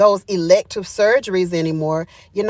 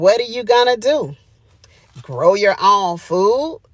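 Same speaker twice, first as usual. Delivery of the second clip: mock scornful, dismissive, sarcastic and mocking delivery. Retelling what he said to her plans, imitating a sarcastic remark. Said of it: "sarcastically said".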